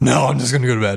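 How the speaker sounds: withdrawn, subdued, low-key, winding-down delivery. Retelling a man's answer after being asked if he wants another, retelling a real quiet reply. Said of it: "He gets real quiet and he goes".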